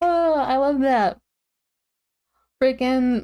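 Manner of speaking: words stretched out, spoken mid-yawn. A tired speaker reacting to a habit picked up from a grandma, yawning. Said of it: "sorry, I keep yawning".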